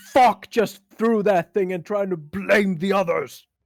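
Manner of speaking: furious, loud, angry shouting. Torque immediately calls out to the lanky guy, yelling out. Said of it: "Torque immediately yells out to the guy".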